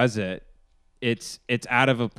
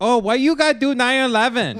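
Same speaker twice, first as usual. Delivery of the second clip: mocking put-on voice, higher pitched; 12 semitones higher, 4 dB louder than usual. Joining a joke about a flight with a voice bit: Ali Wong impression. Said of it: "That was my impression of Ali Wong".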